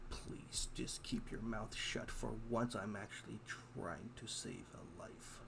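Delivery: soft, muttered under the breath. A girl character answers the merchant who just questioned her, muttering. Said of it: "she will mutter in her old tongue that is known to her culture, aka the, Wallachian vampire coven that she's a part of. / [name] will pause".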